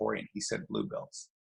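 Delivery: whispered, hushed, under the breath. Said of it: "And I whisper in".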